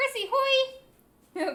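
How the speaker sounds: put-on cute creature voice. Doing a Temmie impression, greeting people: Temmie voice. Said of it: "That's my best Temmie impression".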